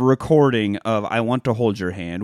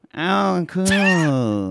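high, stretched-out, cool, easy, friendly tone; 6 semitones higher than usual. Imitating a politician greeting people in a restaurant: Ron DeSantis impression. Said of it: "That's my DeSantis impression".

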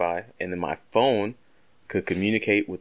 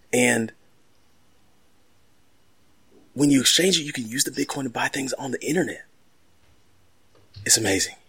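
put-on, mock out-of-breath delivery; 5 semitones higher than usual. Performing a character who explains bitcoin, imitating someone out of breath. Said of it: "really sounds like he's out of breath".

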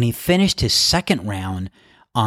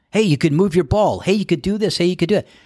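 raised, high-pitched yelling; 8 semitones higher than usual. Retelling how spectators called out to a golfer: imitating patrons yelling advice. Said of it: "some patrons start yelling to him".

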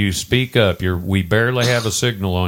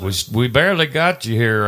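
ordinary delivery

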